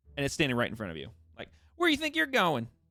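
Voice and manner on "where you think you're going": very high, tiny halfling creature voice. Voicing a halfling blocking someone's way with crossed arms: halfling character voice. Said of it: "it's a halfling".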